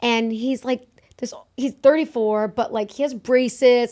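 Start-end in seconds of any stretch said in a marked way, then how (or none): none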